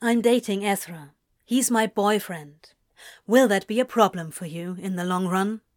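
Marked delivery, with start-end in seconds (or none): none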